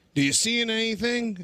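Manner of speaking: loud, high-pitched yell.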